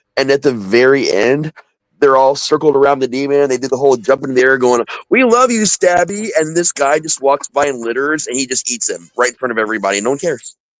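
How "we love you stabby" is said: play-acted shrill, very high, slow, drawn-out excited cheer. Describing an anti-littering PSA, imitating the excited kids cheering for the demon. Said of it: "the kids are all like excited".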